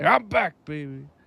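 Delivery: obnoxious heavyset guy voice. Repeating a character's imagined line: obnoxious fat guy voice. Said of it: "Sounded like an obnoxious fat guy".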